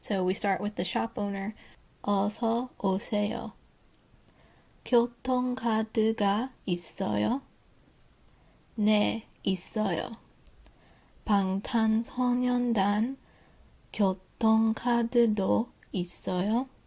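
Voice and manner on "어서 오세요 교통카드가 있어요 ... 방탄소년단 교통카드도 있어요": slow, careful, much slower reading. Lecturer reading a Korean practice dialogue aloud for learners, reading slowly. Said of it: "I'm going to read this slowly".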